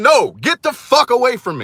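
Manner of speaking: mock full-on, wild, swooping scream. Speaker retells screaming at a woman pulling them toward her car: retelling own screaming. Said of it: "I'm screaming".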